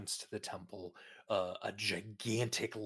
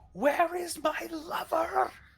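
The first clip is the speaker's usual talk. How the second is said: very high, very loud, shrill, lung-bursting scream; 9 dB louder than usual. Narrating a game scene, the speaker voices a woman rushing at the player, screaming at the top of her lungs. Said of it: "she screams at the top of her lungs".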